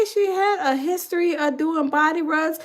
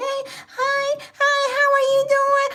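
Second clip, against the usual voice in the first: put-on tiny, high, slow baby-talk voice; 9 semitones higher than usual. Mocking a grown man who talks to the person he sleeps with in baby talk. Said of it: "talking like a little baby".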